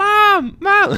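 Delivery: put-on child's voice yelling, very high and loud. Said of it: "You hear your child yelling upstairs".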